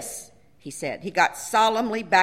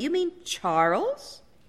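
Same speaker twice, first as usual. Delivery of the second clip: guarded, cautious, wary, pitched-up tone; 6 semitones higher, 4 dB quieter than usual. At lunch, the narrator's husband adds a question, wary. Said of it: "my husband added warily".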